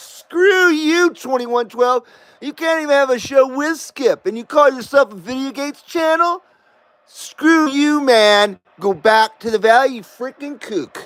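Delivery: mock heckling, high tone. Retelling what quitting subscribers said: imitating subscribers telling him off. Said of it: "They said".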